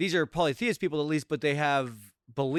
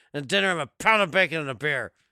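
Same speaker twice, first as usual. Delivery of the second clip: put-on grumpy old man voice, louder; 5 dB louder than usual. Quoting a line from grumpy old men: Burgess Meredith impression. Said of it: "I love me some Burgess Meredith".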